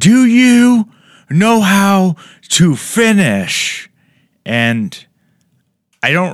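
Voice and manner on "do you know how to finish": acted very high, very slow, breathless, drawn-out yell. Retelling how an older woman at a show yelled, imitating a woman yelling. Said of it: "she yelled at me".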